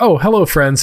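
earnest, wholehearted, totally sincere. Retelling a game scene where Robo greets his friends: earnest Robo voice. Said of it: "Robo is so earnest".

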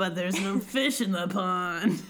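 acted ghostly water creature voice. Retelling a scene from a book, voicing the water wraith: put-on water wraith voice. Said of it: "I love that voice for her".

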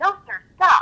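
high theatrical clown voice. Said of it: "bring up the".

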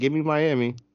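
fearful, scared, nervous voice. Making a reluctant pick after long hesitation: scared. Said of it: "that's how scared I am".

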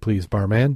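ordinary delivery

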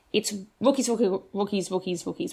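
very fast rapid-fire repetition of one word. Going through the ownership stats, rattling off a word very fast. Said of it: "Why did I try to say that so fast?".

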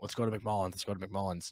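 ordinary talk, nothing marked

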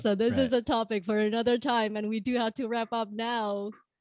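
faked, acted-up low voice. Saying it's time to wrap up, in a put-on deep voice. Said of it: "That was a very good deep voice".

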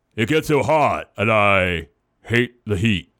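low, dropped, effortful altered voice. Reading a story about a friend melting in the heat: David impression voice. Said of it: "I'm gonna do my best David impression voice".

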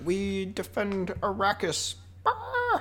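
hushed, slowed put-on impression. Talking about defending Arrakis with another speaker, do your Oscar Isaac impression. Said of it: "That's my Oscar Isaac impression".

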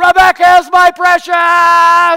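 full-throated yell, very loud, very high, drawn out. Retelling yelling into the phone to a daughter at college: retelling own yell. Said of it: "I yell".

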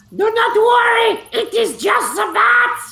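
very high-pitched shouting. When a guard calls down asking if anyone is there, Kryon shouts back. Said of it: "Kryon shouts back".

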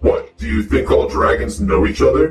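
electronically altered voice, voice changer effect. Turning the voice changer on so others can hear it: voice changer effect. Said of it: "the voice changer on? ... I'll do it just so you can hear it".

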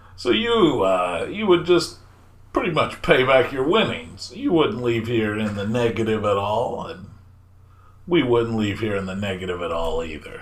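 swooping, crooked ringmaster voice. The ringmaster answers a visitor's question about paying back winnings, crooked ringmaster voice. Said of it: "one of them being the ringmaster, / And then they start backpedaling and step into the steps into the other room. / The ringmaster starts talking and they're like".

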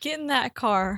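mock country man voice. A speaker retelling what he told her after overhearing her, imitating a country man. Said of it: "he's so country".

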